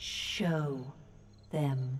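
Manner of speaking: whispered, slow, soft, chiming, bell-like falling words. A familiar woman's voice cuts through the din, slow, chiming bell-like voice. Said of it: "Each word comes slowly, falling with what sounds like the chiming of a small bell".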